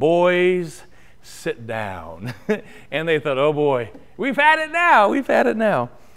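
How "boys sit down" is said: put-on deep brogue with the word "boys" stretched out. Retelling how a dad spoke to his boys after they dodged a bull, in Stuart Briscoe's British Isles brogue. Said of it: "in his great British Isles brogue".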